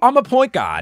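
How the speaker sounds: shrill, booming, high, loud put-on Australian accent. Imitating an australian woman who plays point guard, attempted australian accent. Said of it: "I will not do an attempt at an Australian accent again".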